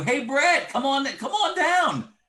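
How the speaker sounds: very high, hollered yelling. Acting out a friend calling down a dark alley: imitating a friend yelling. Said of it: "one of your best friends yells to you".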